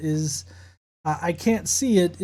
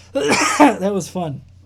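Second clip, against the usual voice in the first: normal talking voice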